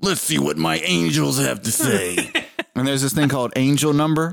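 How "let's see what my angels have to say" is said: slow, rough New York cop-style voiceover voice. Imitating a show's voiceover for the listener: rough new york cop voice. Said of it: "really rough voice. ... almost like this New York like cop".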